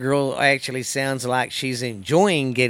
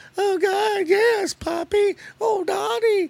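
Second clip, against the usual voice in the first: very high slow squealing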